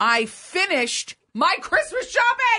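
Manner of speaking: screamed, wildly swooping delivery. Reading aloud a good-morning message Karen sent them: mock scream. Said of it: "She screamed it like that?".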